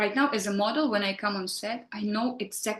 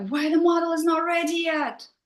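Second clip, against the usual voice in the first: loud, high screaming voice; 8 semitones higher, 5 dB louder than usual. Retelling a funny story about a director on set: imitating a director screaming. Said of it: "the director will be screaming".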